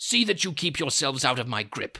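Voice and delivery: snarling, menacing delivery. A narrator reads a man's warning after he bends a poker, snarled. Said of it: "he snarled".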